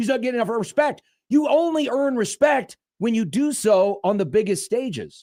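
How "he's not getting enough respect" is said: grumbling, griping, complaining tone. Quoting people who keep saying he gets no respect: imitating people complaining. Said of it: "who are constantly complaining".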